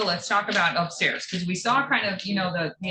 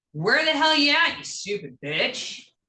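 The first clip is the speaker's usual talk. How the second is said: loud, high-pitched yell; 7 semitones higher, 4 dB louder than usual. Showing how loud their outside voice is: loud outside voice. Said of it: "I have an outside voice, so I'm like".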